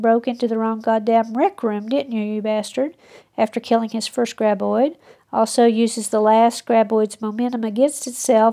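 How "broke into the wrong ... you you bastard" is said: ordinary delivery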